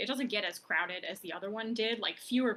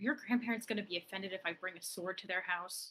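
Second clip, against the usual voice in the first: muttered under the breath; 4 dB quieter than usual. A character asks a player aside, out of the group's hearing; muttering. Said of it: "She kind of mutters to you like".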